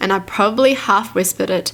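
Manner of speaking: plain reading voice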